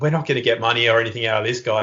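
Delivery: ordinary delivery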